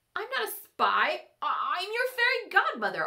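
squeaky, high little squeak. Accused of spying by a scowling woman, the narrator replies, squeaked. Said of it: "I squeaked".

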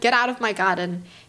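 plain

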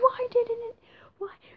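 acted-out, very high, panicky, freaked-out outburst. Telling viewers about animals missing from the description, retelling freaking out. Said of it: "starting to freak out".

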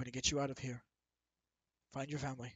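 low, soft, quick, calming and reassuring murmur. Narrating a story, a character calms a locked-up man in a low, soft tone. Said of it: "Speaking in low, soft tone".

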